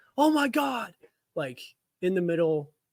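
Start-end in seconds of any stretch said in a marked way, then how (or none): 0.2-1.0 put-on very high, piercing, big scream. Retelling a reaction to breaking trade news at work: retelling a big scream. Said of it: "I let out one of the biggest screams".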